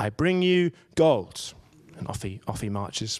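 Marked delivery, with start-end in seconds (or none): 0.0-1.5 very solemn, slow and loud. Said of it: "delivers his line very solemnly".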